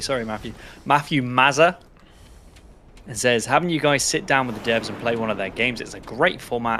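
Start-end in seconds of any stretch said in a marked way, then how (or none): 0.8-1.8 name said with British accent, higher pitch. Reading out a donor's name, pronounced in a british accent. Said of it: "I'm going to pronounce this in a British way".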